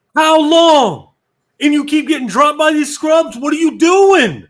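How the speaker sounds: shrill, full-volume, high-pitched yelling. Retelling yelling at a teammate during a game: imitating himself yelling. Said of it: "I start yelling again".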